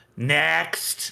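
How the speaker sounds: rasping, scratchy call. A voice calls out from behind papers at the end of the room: scratchy shout. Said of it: "a kind of a scratchy voice shout out".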